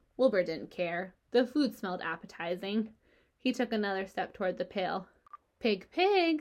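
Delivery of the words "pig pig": gentle, kindly, coaxing voice, pitched up. Narrator reads a man coaxing the pig back toward the barnyard; kind voice. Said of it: "said Mr. Zuckerman in a kind voice".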